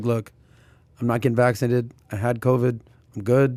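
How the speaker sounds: mock smooth, unbothered, flat, chill monotone delivery. Retelling a player's calm refusal of the vaccine: imitating a monotone, chill Bradley Beal. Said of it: "Very monotone, chill".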